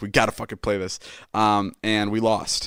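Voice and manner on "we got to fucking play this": put-on enraged, furious, cursing, no-arguments insistence. Retelling Ilya insisting on the bet: imitating Ilya furious. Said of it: "Ilya was so fucking furious".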